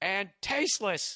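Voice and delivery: put-on angry, heated, indignant outburst. Reading an email aloud to listeners, retelling the writer's yell. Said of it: "now she's going to yell again".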